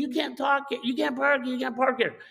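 mock shrieked screaming, repeated over and over. Retelling a driver who stomped back from his car; retelling his screaming. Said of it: "he's just screaming".

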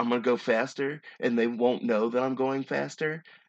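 usual speaking voice

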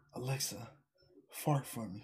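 very soft, slow, hushed, barely audible whisper. Retelling a video of a man talking to his Alexa: imitating someone whispering. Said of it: "a dude was whispering to his Alexa".

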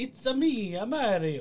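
very high, very drawn-out, slowly swooping Italian lilt. Showing how a movie's lead should have sounded: Mario voice. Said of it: "he should have sounded like".

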